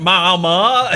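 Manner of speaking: put-on Deep South accent. Describing an actor's accent in a film, saying one word in a deep South accent. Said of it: "doing a deep South accent".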